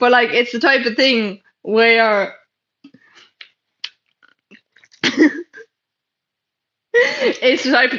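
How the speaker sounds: talking while laughing and giggling. Giving unofficial advice on avoiding homelessness, laughing while talking. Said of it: "I'm sorry for that".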